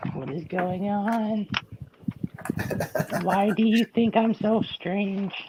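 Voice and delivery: very soft, high, hushed eerie voice. Building Lego with others and asking about a skipped step, in a creepy voice. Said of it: "That was a creepy voice there".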